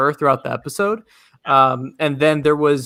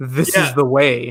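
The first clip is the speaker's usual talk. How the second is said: put-on mocking tone, slow and drawn out. Retelling how a character mocked another, imitating a mocking line. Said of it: "mocking him".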